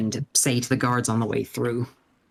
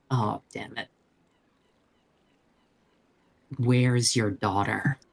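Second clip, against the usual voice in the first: put-on grim, gloomy witch character voice. The speaker voices a witch being questioned, in a grim witch voice. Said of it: "in my, you know, grim witch voice".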